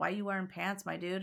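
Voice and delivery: ordinary talk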